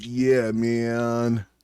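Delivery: surfer-style delivery. Showing how the phrase should be said like a surfer, surfer dude voice. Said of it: "you gotta say it like a surfer".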